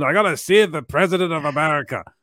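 put-on American accent. Speaker imitates Gerard Butler in a film parody, Gerard Butler's put-on American accent. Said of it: "This is my American accent".

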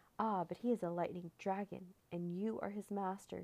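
plain reading voice

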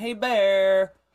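yelling loudly. Playing a character making himself big in front of a bear: yelling at a bear. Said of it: "more specifically yelling".

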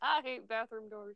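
muttered under breath. Quoting a video game character's line again, muttered under your breath. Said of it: "I muttered that one under my breath".

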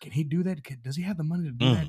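put-on loud whisper. Retelling a grandmother's aside to a mother: imitating a loud whisper. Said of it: "she kinda whispered, but it was still loud enough".

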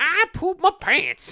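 prospector voice, pitched very high. Joking about someone who was out in the car: prospector voice. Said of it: "I have to say it like a prospector".

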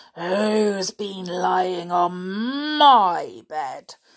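slow growly bear voice, "on" stretched. Narrating a story, voicing the father bear in a growly voice. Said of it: "said the father bear in a growly voice".

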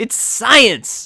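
play-acted excited shriek, very high. Showing how Bill Nye screams a word: screaming like Bill Nye. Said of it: "he always screams the word science".

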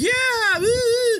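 very high, forced, lame, fake celebratory whoop. Retelling a movie scene where a character celebrates: imitating forced celebrating. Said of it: "That felt so forced and lame".

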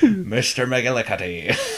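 Irish accent with extra rolled R's everywhere. Showing how to say the name again: Irish accent with extra R's. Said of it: "a little more R's in everywhere".

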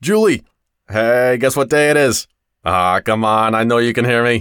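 bellowing camel voice. A camel in an ad pestering people in a crowded office, bellowing camel voice. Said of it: "he bellows".

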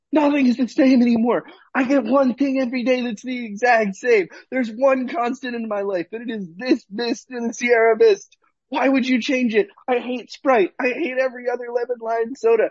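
enraged, high-pitched, furious yelling rant. Recounting a man yelling from his car, retelling a furious yell. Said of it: "how loud he was yelling".

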